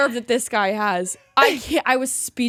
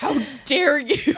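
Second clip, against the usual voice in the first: mock-indignant, acted-out angry tone; 2 semitones higher than usual. Recounting an argument with him over packing the house, replaying her reaction: retelling an angry outburst. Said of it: "I was so mad".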